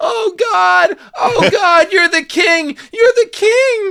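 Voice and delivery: long, very high, loud, drawn-out wailing howl. Retelling a movie scene where a character starts to howl. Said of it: "Leslie starting to howl".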